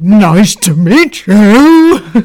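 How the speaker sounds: very loud, very slow, gruff hunchback voice. Retelling how dad, pretending to be a hunchback, greeted a boy: gruff hunchback voice. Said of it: "a really gruffly voice".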